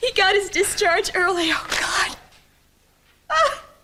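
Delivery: tearful voice. Telling a neighbor the husband got his discharge early: crying. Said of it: "why are you crying?".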